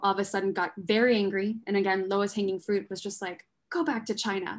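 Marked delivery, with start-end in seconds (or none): none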